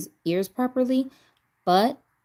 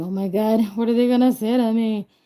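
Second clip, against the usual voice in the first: nervous worried voice, higher; 4 semitones higher, 4 dB louder than usual. Retelling her thoughts in a doctor's waiting room: imitating her own nervous thoughts. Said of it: "my heart is beating all fast".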